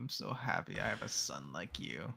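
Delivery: soft, sing-song, mock-sincere, ironic sarcasm. Playing a parent speaking to their son Weber, sarcastic. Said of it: "That sounded sarcastic to me".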